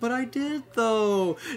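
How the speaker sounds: cute whine, up high. Describing a character's offhanded quips from the side, use a cute whiny Serval voice. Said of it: "Just this very cute, whiny voice to her".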